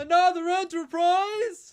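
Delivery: dumb, dopey voice, very high and loud. Told to say the line properly, the speaker delivers it in Packard voice. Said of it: "I do dumb voice better".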